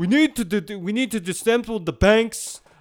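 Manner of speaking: loud, high, campaign-style political yell. Quoting a yelling politician with a Bernie Sanders impression. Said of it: "And you do the better impression".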